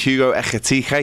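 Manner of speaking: Liverpool Scouse accent. Transfer news roundup, saying the name in a Scouse accent. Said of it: "I have to do that in a Scouse accent".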